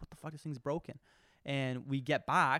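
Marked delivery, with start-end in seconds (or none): 0.0-1.0 put-on panicked voice, quieter. Retelling going back full throttle on a broken Sea-Doo: retelling panicked words.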